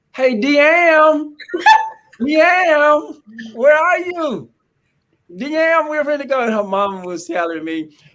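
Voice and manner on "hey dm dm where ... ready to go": very high, long, drawn-out hollering. Speaker retells calling for Amber in a store; retelling own hollering. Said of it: "and I was hollering".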